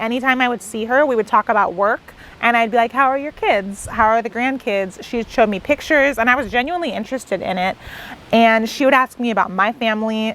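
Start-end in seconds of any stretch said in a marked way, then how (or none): none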